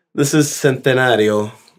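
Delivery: put-on Mexican accent. Introducing a tequila while sharing drinks, the speaker uses a mexican accent. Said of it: "that's a Mexican accent".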